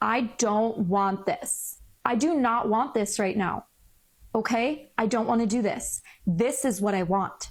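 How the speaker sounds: forceful, very strong, firm, no-nonsense delivery. Showing how to say what you want so people take it seriously, very strong. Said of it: "you have to be very strong and say".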